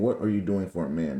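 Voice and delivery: plain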